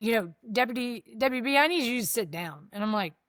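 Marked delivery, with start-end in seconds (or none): 0.5-2.7 solemn, grave, serious tone. Retelling being called into the lieutenant's office, imitating the lieutenant's serious tone. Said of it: "He's got this serious".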